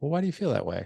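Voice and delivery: genuinely curious tone. Explaining why people get defensive, demonstrating a why-question in a curious questioning tone. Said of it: "with a very curious tone".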